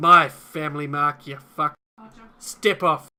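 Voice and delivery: very loud, gruff barking voice. Cordell watches his family leave, then turns to Mark: Cordell's gruff voice. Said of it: "in a, a gruff voice says".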